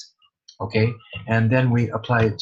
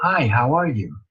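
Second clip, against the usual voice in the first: English sounds set back in the mouth; 3 semitones higher than usual. Showing how english sits farther back in the mouth: english mouth position. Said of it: "And in English".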